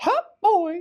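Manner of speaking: high, loud squeaking voice. Asked to do Urkel, trying a different voice: Mickey Mouse voice. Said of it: "was a Mickey Mouse".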